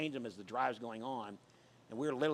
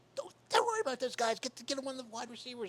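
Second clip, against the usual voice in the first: put-on yelling, much higher pitch; 12 semitones higher than usual. Retelling how the wide receiver coach came over yelling at him, retelling Kenny Jackson's yell. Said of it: "He's yelling at me".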